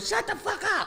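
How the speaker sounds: shrill, high, furious yell. Retelling being stressed in the car while others talked: retelling a yell. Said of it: "I yelled".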